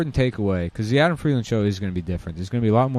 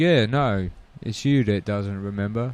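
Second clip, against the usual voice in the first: fake Cockney British accent. Retelling a reply to old friends he fooled: put-on Cockney accent. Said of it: "Cockney scum".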